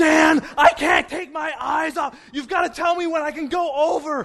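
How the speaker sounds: loud high-pitched screaming. Recalling shouting back at Dan while he was screaming, retelling screaming back. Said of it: "I'm screaming back at him".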